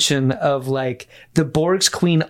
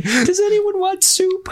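tiny, very high, squeaky chipmunk voice. Imagining tiny creatures seen zoomed in under a microscope, squeaky chipmunk voice. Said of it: "they're like little chipmunk voices".

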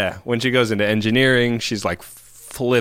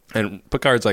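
ordinary talk

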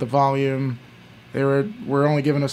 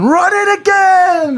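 shrill, very high, very loud demanding scream; 8 dB louder than usual. Retelling Bird at the end of the bar: imitating Bird screaming. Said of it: "He was just screaming".

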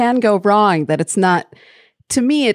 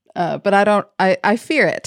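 plain

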